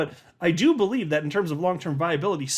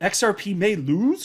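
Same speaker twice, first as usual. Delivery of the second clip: rising upturn at end of lose. Reading aloud a tweet ending in a question mark, rising at the end on lose. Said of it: "my inflection goes up like this. I pitched that".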